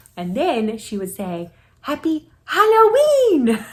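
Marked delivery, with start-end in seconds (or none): 1.8-3.7 put-on very high, very loud, cheerful sing-song shout. Retelling a child getting candy: imitating a child's cheerful shout. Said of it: "Just like that".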